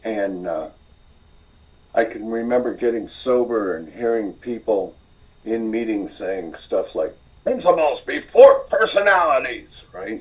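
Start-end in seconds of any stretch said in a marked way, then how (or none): 7.4-9.9 put-on loud, high, crusty old curmudgeonly voice. Recalling what people in aa meetings used to say, in a crusty old curmudgeonly voice. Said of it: "In a crusty old curmudgeonly voice".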